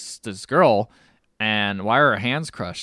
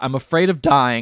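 mock screaming, louder; 3 semitones higher, 5 dB louder than usual. Retelling a movie scene where a dying man screams for water: imitating a screaming man. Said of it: "he screams".

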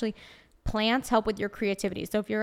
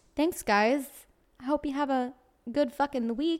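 put-on Brooklyn accent; 4 semitones higher than usual. Signing off the episode and wishing everyone a good week: put-on brooklyn accent. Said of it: "I'm gonna keep doing the Brooklyn accent".

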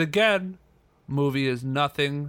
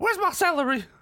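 animated, sing-song comic voice, pitch swooping widely. On a podcast, the speaker does their best Madea impersonation. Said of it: "in my best medea impersonation".

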